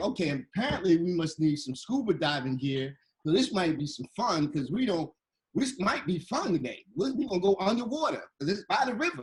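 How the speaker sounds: normal talking voice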